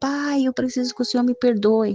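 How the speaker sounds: mock frantic, high, desperate yell. The speaker retells calling out to their father, retelling desperate yelling. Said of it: "Eu gritava um desespero".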